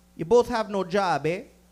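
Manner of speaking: put-on sassy Jamaican accent, mock-sassy nurse voice. Retelling how a nurse reacted to two comedians, imitating a sassy Jamaican nurse. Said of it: "A fucking sassy Jamaican nurse".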